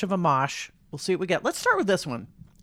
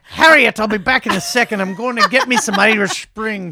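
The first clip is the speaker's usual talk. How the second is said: put-on Irish brogue; 3 semitones higher, 9 dB louder than usual. In a comedy bit, calling out to harriet in a mock irish accent. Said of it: "Apologies to Irish people everywhere".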